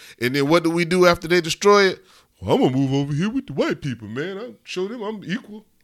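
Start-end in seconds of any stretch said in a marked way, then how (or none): 2.4-5.6 mocking, dopey put-on dumb voice. Acting out how such people sound in his head, in a mocking dumbass voice. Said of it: "That's that dumbass voice again".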